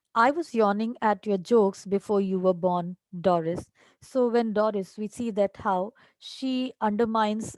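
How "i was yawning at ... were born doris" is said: ordinary delivery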